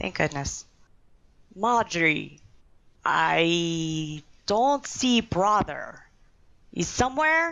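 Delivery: hesitant, choppy, halting, broken phrasing. A masked stranger speaks to the startled marjorie: halting, broken speech. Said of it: "Oh, I will uh check cave. Uh, you stay. Uh, I'll uh, just stay. Stay".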